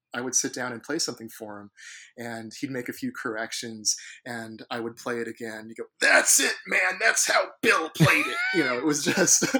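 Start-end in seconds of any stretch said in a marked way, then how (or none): 6.0-8.3 very loud, very high, booming, swooping exclamation. Speaker recalls a man correcting his playing and approving it: imitating the man he played for. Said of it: "you impersonate his voice very well".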